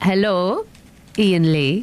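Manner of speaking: bad, fake put-on Geordie accent. Asked for her turn, greeting the host in a bad geordie accent. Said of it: "That's awful".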